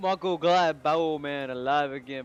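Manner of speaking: put-on southern accent. Playing the character mako in a game: southern accent. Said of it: "why am I speaking in a southern accent".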